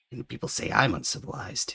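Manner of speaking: gruff, grumbling creature voice. Voicing a kobold who stares at a player, gruff kobold voice. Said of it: "he says with a gruff".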